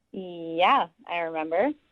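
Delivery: annoyed, mildly angry tone. Confirming on a phone call that you remember a date: sounding kind of angry. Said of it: "you sound kind of angry in your voice".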